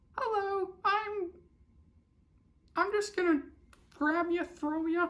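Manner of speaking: gentle, very soft murmur pitched very high. Player retells a big brute's line while grabbing Toadie, in a soft Mickey Mouse voice. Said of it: "who has one of the softest voices".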